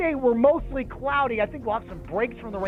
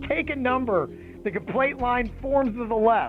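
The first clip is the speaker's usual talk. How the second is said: plain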